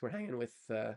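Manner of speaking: cracking, breaking voice. Streamer telling the chat about an upcoming Twitter space, voice cracking. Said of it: "my voice is cracking".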